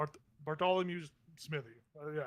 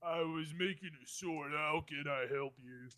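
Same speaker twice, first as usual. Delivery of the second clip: very slow, dragged-out tough-guy mumble. Playing a sword maker who speaks mid hammer without turning around, in a Rocky Balboa voice. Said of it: "He's very much Rocky Balboa at this point".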